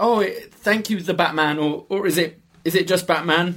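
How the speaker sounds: put-on jittery, all-nervous, high-pitched delivery. Recapping a scene where Batman saves her, imitating nervous Selina Kyle. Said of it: "she's again all kind of nervous".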